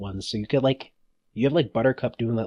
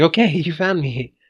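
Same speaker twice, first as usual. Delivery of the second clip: scared, high, slow, drawn-out voice; 6 semitones higher, 5 dB louder than usual. Discussing a cartoon episode with a co-host, imitating scared Buttercup. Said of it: "Buttercup's so scared of getting eaten".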